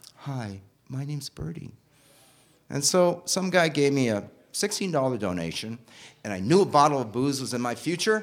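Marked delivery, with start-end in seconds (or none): 0.2-1.7 soft, calm, tiny little voice. Retelling how someone introduced themself at the street corner, Birdie's calm, tiny little voice. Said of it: "this really calm, tiny little voice say".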